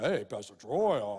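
very low put-on pious tone. Mimicking people who change their tone when talking to the pastor; mock religious-sounding tone. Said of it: "they change their tone of voice".

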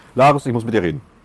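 strict, serious acted voice. Retelling how the hotel trainer approached them on their last internship day, mock-stern tone. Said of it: "Wirklich ein strenger Ton".

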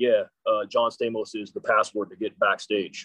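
low, deep voice of a huge bouncer. Retelling what a big man said to the group, imitating a deep voice. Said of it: "this deep voice".

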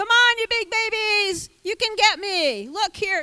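very high, loud taunting yell. Acting out the giant coming out before the army: imitating a giant yelling taunts. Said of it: "yelling at them".

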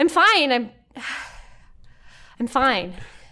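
breathless shock. Voicing a character just woken, catching her breath: catching breath in shock. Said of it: "catches her breath and just looks at Aaron in shock".

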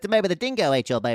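mock Australian cartoonish voice. Speaker messes with someone by doing a Rocco voice. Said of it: "it's not even just an Australian accent. It's more or less me kind of doing a Rocco".

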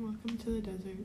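very hushed, resigned and defeated murmur. Replying to another speaker's question, sounding so defeated. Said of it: "That sounded so defeated".

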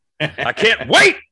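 extra pumped, eager, loud, high excitement. A co-host, urged to be more amped up than the other, answers more amped up. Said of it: "you got to be a little bit more amped up".

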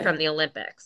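normal talking voice

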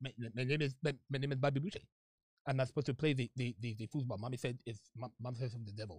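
very low, hushed, halting mumble. Answering a chat remark by doing a Bobby Boucher voice. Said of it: "kinda sounds like Bobby Boucher".

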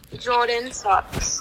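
poor, bad, fake British accent. Asked for a British impression, the speaker says it in a bad British accent. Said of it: "give me your best impression of a British person".

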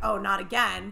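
ordinary delivery

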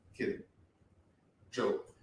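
put-on hushed, dead-serious deadpan, near whisper. Retelling a man's reply after she apologizes, imitating a deadpan delivery. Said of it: "In the most non-smiling, just non-joking tone".

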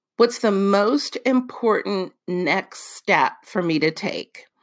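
ordinary talk, nothing marked

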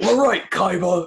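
aggressive yell, very high-pitched and loud, barked hard. Imitating a quiet kid who suddenly turns aggressive: aggressive Yami Yugi voice. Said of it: "turns into the most aggressive person I've ever met".

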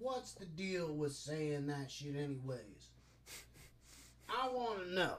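put-on drunken, pushy woman's voice. Retelling what a drunk show host said to her guest: imitating a drunk woman. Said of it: "all drunk, and she's like".

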